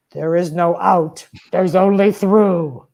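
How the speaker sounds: rough, gravelly tone of voice. Retelling what a woman told him during ayahuasca when he wanted out, imitating a gravelly voice. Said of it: "this gravelly voice".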